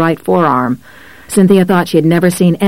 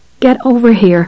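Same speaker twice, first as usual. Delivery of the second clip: voice cracking, higher; 5 semitones higher than usual. Narrator reading a woman calling others over to a bleeding man, voice cracking. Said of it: "her voice cracking".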